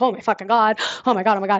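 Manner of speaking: put-on panicked babble, rattled-off rush of words. Retelling a first emergency call, panicking: retelling own freaking out. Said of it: "I'm freaking out".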